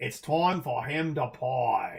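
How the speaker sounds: bad, put-on Australian accent, very slow, drawn way out. Answering a request for an Australian impression, in a bad Australian accent. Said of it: "a bad Australian impression".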